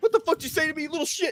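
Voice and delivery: fierce, savage father outburst, pitched very high. Joking about how a tough dad answers back: imitating Savage Dad. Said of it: "Savage Dad is over there like".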